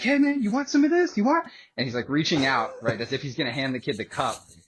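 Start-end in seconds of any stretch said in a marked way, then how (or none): 0.0-1.5 put-on very high, loud drunken holler. Retelling a friend calling to a kid through a rolled-up window: retelling a friend's yell. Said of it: "He's yelling so the kid can hear him".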